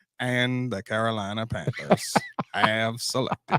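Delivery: very low, very deep, slow, measured announcer voice. Announcing the team making the draft pick: Morgan Freeman voice. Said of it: "It's my best, my best impression".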